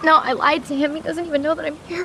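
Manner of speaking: high-pitched, sobbing, crying through every word.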